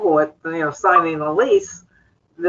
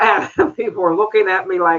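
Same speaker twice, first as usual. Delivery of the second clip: ordinary talk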